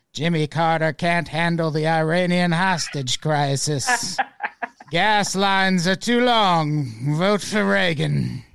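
drawn-out, stretched-long channeled-spirit voice. Retelling what a channeled entity might say, imitating Seth's voice. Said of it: "Seth being like".

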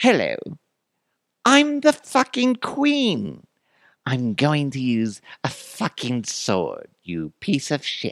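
put-on English accent, high, swooping and lilting. Retelling what Queen Elizabeth allegedly said, Queen Elizabeth impression, English accent. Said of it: "I'd even try to do an English accent".

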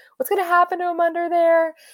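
mock very high bawling, sobbing through tears. Recalling sitting in the exit row on a plane, retelling bawling, crying. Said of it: "I was bawling, crying because I was like".

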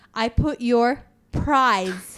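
put-on slight Filipino accent. Quoting a woman handing over a bag with a prize, in a slight Filipino accent. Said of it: "obviously with a slight Filipino accent".

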